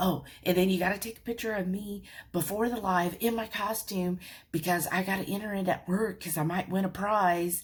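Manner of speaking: mock wound-up, eager, excited, gushing chatter. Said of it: "so hyper".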